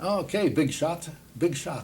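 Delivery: put-on Italian dialect accent. Speaker retells his grandfather greeting him at the door, in an Italian accent. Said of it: "he'd say in his Italian dialect, an Italian accent".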